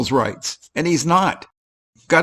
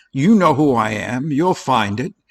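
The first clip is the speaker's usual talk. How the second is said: put-on arrogant, haughty tone. Reacting to a video, mocking an auditor's arrogant reply: mocking Gutterman's arrogant tone. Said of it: "The arrogance, the conceit".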